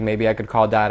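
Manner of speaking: ordinary talk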